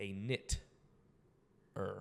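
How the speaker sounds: knitter said slowly, broken into separate parts. Slowing the word so everybody hears it: word 'a knit' slowed down. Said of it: "Now I'm gonna slow this down so everybody hears me".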